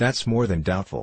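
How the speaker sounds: ordinary delivery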